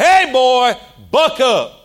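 put-on big, very slow, drawn-out booming voice. Speaker retells his aunt calling to him over the congregation, imitating a booming voice. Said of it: "with a booming voice over the whole congregation".

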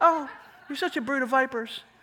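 kind, sweet, nicely said. Showing what an insult would sound like said in a really nice way. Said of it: "saying it in a really nice way".

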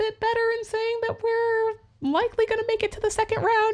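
extended, very high, doubtful rising falsetto. Predicting the team will make the second round: unconfident rising falsetto. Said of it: "You can tell by the intonation in my voice that I don't have confidence in that".

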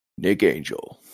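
dramatic movie-style voice. Asked by a co-host to say a name in their best movie person voice. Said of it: "could you say in your best movie person voice".

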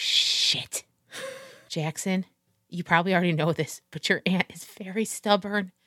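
hushed, whispered grumbling muttered under the breath. Voicing a character telling jackson about his aunt: muttering under her breath. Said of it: "under her breath, she's like".

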